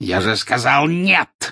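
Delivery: sharp barking. Narrator voicing the cruel-faced man stopping the werewolf, in a barking shout. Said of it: "рявкнул жестоколицый".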